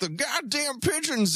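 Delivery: put-on old man voice, yelling. Imagining an old man yelling at pigeons at dawn: imitating old man Mike yelling. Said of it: "He just goes out there and yells at the birds".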